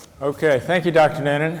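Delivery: still catching breath, winded, out of breath. Taking the handoff from doctor noonan after standing up too quickly, out of breath. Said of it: "let me catch my breath".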